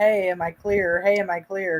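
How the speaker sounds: usual speaking voice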